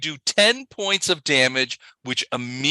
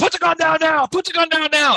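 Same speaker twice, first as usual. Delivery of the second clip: very high-pitched, yelled cop voice. Voicing police officers at a standoff, cops yelling orders. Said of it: "Cops start yelling".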